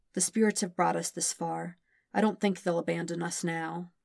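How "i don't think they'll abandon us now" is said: ordinary delivery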